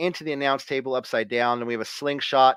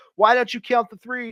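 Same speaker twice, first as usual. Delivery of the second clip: imitated scolding wrestler voice, pitched higher; 9 semitones higher than usual. Retelling a wrestling match where one wrestler berates another: imitating CM Punk berating. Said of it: "Punk is berating Seth".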